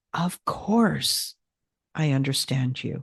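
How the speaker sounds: soothing, sympathetic, comforting tone. Showing how tone changes a phrase, comforting, understanding tone. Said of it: "when you say it with that tone of comforting and understanding, sounds different".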